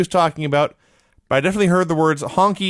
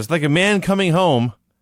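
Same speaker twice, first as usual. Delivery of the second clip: normal talking voice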